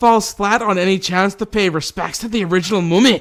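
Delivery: put-on loud, high Scottish accent. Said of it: "I don't know why I went Scottish there at the end".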